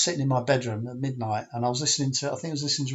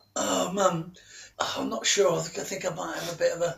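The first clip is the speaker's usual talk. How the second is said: feigned high, creaky sick-in-bed voice; 5 semitones higher than usual. Retelling his reply as mum comes up to wake him, in a fake sick voice. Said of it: "Did you put on your sick voice?".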